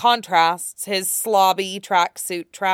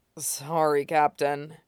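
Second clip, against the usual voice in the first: put-on soft, weary, slurred, exhausted murmur; 4 semitones lower, 6 dB quieter than usual. Reading a swordsman apologizing to his captain, as a murmured apology. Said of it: "Zoro murmurs".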